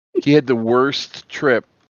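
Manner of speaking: normal talking voice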